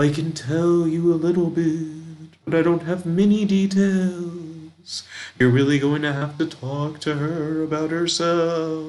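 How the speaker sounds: generic ghost voice, somewhat drawn out. Voicing a spirit as it answers a question: generic ghost voice. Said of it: "I want to give it a generic ghost voice".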